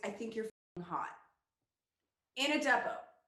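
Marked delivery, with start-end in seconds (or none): 0.0-1.1 low, hushed half-whisper under the breath. Retelling what a defense attorney half-whispered during a deposition: low half-whisper. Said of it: "whisper in a low voice".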